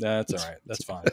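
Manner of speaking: very soft, low, dismissive tone. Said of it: "she's like".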